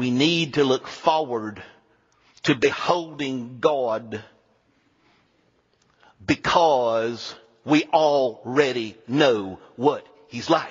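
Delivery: put-on slow, unhurried, light South Carolina accent. Quoting a former teacher's remembered words, in his South Carolina accent. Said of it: "he said in his little South Carolina accent".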